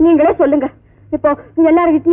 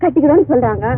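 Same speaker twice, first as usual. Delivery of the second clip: plain reading voice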